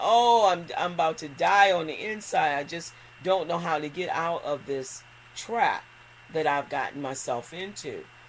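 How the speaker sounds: ordinary talk, nothing marked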